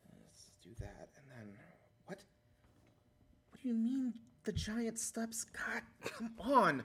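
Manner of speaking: mumbling, muttering under his breath. Voicing a disheveled, furiously writing Hamlet: muttering to himself. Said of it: "he's sort of muttering to himself".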